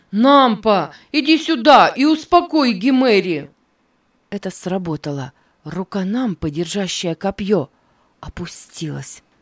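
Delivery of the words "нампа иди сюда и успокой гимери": high, desperate shout, crying out in despair. Neva, needing to warn his brother, calls out to Nampa, desperate shout. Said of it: "в отчаянии крикнул".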